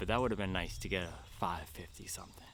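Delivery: soft, regretful whisper.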